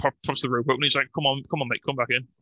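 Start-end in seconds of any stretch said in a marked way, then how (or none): 1.1-2.2 patronizing, condescending, cajoling and coaxing tone. Retelling a wrestler calling his partner back into the ring: imitating condescending coaxing. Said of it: "really condescending".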